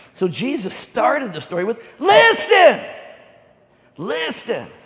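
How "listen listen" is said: very loud, high, swooping, emphatic raised voice. Retelling how Jesus started the story, bringing emphasis: raised voice on 'listen'. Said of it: "the reason I raise my voice".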